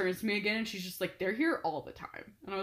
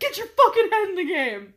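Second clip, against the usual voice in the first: high, shrill scream at full volume; 10 semitones higher, 8 dB louder than usual. Retelling screaming at a player skating by, retelling own screaming. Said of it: "I was screaming".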